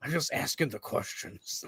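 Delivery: airy breathed-out voice. Taking up a Jesse Ventura impression after another speaker tries: Jesse Ventura impression. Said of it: "I can't do a good Jesse impression".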